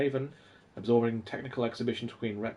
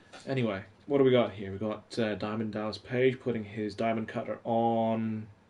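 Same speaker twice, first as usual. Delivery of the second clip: usual speaking voice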